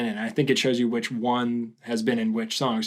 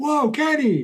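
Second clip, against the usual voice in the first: very high, loud yell. Imitating a basketball player yelling during a game: Dwight Howard yelling. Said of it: "you'll hear him yell, kinda sound like".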